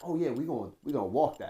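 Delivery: put-on cocky, swaggering, full-of-himself boasting voice. Retelling what Mason said before the game: imitating Mason's cocky boast. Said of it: "Mason gets in his cocky joint".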